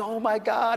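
acted, high-pitched, tearful weeping outburst. Retelling a sister's tearful reply on the phone: imitating someone crying. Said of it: "She's crying on the phone".

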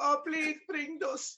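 put-on very high-pitched old grandmother voice. Hosts taking turns doing voices, one does the abuelita: abuelita voice. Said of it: "Here to do the abuelita".

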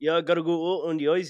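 Minnesota accent, Swedish touches. Speaker joins in on a Minnesota accent bit, Minnesota accent with Swedish touches. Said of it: "You mix your Sweden and your Minnesotan".

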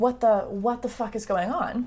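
ordinary talk

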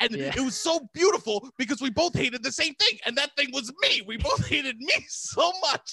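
high, loud, screaming rant. Retelling what they screamed at someone while driving around, reenacting the screaming. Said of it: "And I'm screaming at Robbie this".

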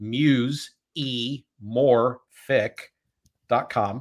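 drawn out slowly. A host introducing a guest repeats the guest's website name, said real slow. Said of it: "Let me say that real slow".

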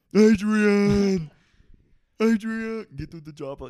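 very loud, high, bellowed, drawn-out call. Answering a request for an impression: Sylvester Stallone impression. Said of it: "Can you do a Sylvester Stallone impression?".

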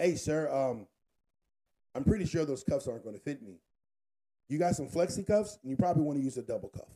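very polite, courteous, professional-sounding voice.

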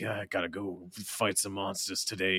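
put-on grimy old man voice. Joking about a character in game trailers: Warrior of Light as old grimy man. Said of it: "He's like".

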